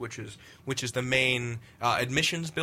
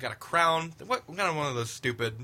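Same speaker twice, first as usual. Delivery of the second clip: normal talking voice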